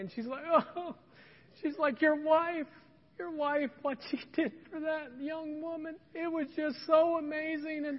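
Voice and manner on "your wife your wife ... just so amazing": bawling, talking through sobs. Retelling the manager coming up to their table crying, imitating a sobbing manager. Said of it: "like sobbing like right at our table".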